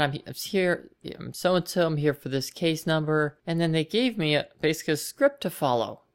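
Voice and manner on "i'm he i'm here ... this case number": ordinary talk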